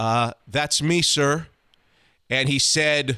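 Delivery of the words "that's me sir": mock-sheepish, acted-out sheepish tone. Speaker retells answering men who came to the room looking for them, mock-sheepish. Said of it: "I said sheepishly".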